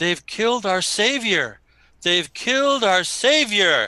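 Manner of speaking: high, shouted outcry of a crowd. Narrating a scene, the speaker voices the crowd shouting after a killing, crowd shouting. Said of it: "all the people behind start shouting".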